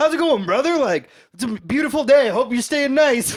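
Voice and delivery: high, loud, overly friendly stoner voice.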